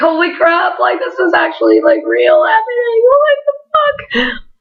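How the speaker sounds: high, climbing, swooping, overwhelmed, disbelieving freak-out. The speaker retells meeting their heroes of nine years, reenacting freaking out. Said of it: "I'm just like freaking out".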